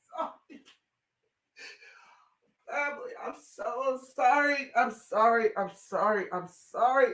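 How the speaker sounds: struggling to stay composed. Telling viewers about a young woman's death, struggling to stay composed. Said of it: "Give me a second".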